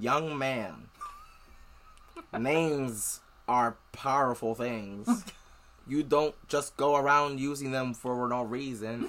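clumsy, badly done put-on Southern accent. Retelling how a card-shuffling man answered a question, in a bad southern accent. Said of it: "it was a bad southern accent".

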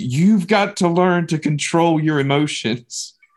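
nearly screaming voice. Recalling disciplining someone and losing his temper, retelling a raised, nearly screaming voice. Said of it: "I just raised my voice probably nearly screaming".

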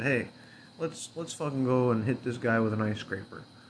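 ordinary talk, nothing marked

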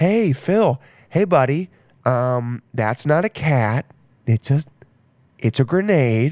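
put-on hushed, serious, low, soft voice. Describing someone warning a buddy named Phil, mimicking a low, soft voice. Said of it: "their voice gets really low and like soft".

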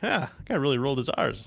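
ordinary delivery

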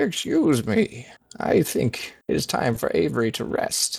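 put-on creaky, high elderly man's voice. Game master speaking as the high cleric standing in the door, in an old man voice. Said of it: "this is [name]'s old man voice".

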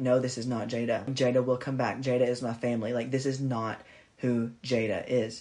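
normal talking voice

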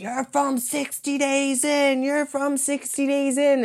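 very high-pitched, shrill shouting. Retelling how, one season, people yelled at the girls: re-enacting yelling. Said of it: "they literally started yelling at the girls".

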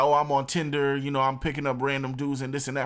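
ordinary delivery

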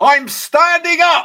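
shrill, booming, very loud, high-pitched shout. Telling a story about shouting in the middle of a building: retelling a shout. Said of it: "I just shouted".

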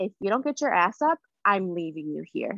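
ordinary talk

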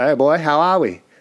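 very loud put-on bogan Australian accent. Imitating how Australians talk, bogan Australian accent. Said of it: "I love the Australian accent".

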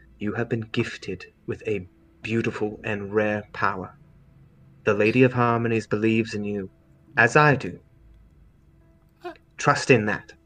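stern character voice. Zemi squeezes Mimi's hands tightly and speaks to Mimi: Zemi, speaking sternly. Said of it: "looking at you very sternly".

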